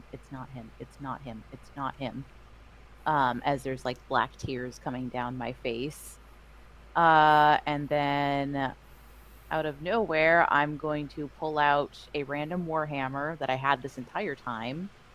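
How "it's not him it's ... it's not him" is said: very soft, very quiet repeated mumble under the breath. Describing their character's reaction in the scene, muttering under breath. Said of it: "under my breath is it's not him".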